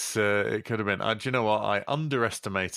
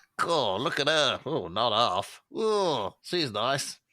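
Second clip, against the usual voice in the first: cheeky, leering seventies British sex comedy voice; 3 semitones higher than usual. Explaining how they fancy people, the speaker uses a seventies british sex comedy voice. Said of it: "as if they're in a seventies uh, British sex comedy".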